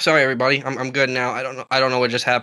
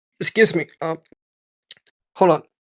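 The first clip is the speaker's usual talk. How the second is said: choking, with interrupted, broken-off speech; 4 semitones higher than usual. Asked for shout-outs before the end, the speaker is choking on swallowed water. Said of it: "I just swallowed some water and went down the wrong pipe".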